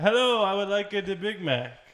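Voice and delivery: put-on Italian accent. Retelling how dad ordered at a drive-thru pretending to be Italian: imitating a fake Italian accent. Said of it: "he pretended to be an Italian man".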